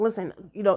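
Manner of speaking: plain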